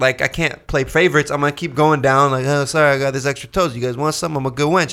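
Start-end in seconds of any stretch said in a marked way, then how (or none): 2.5-4.9 put-on Italian mobster accent throughout. Retelling how a woman handed extra toast down the row, italian mobster accent. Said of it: "Why does she talk like an Italian mobster?".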